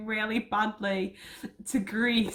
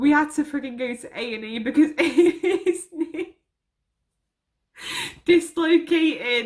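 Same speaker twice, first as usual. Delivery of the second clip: talking through laughter, higher and louder; 4 semitones higher, 6 dB louder than usual. Recalling a friend's dislocated knee at a and e: laughing while talking. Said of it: "I'm so sorry that I'm laughing".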